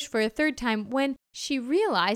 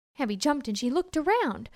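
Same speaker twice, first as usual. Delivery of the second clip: ordinary delivery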